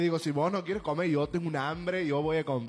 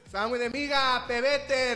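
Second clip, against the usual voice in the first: mock street-vendor shouting, pitched higher; 8 semitones higher than usual. Retelling a seller's cry as people board the bus, as a reenacted shout.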